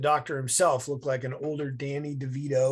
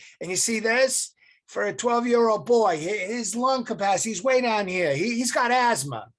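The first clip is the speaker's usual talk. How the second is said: put-on Massachusetts accent, loud and pitched up; 8 semitones higher, 6 dB louder than usual. Retelling what a man said while showing a chart, in a Massachusetts accent. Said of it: "in this Massachusetts accent".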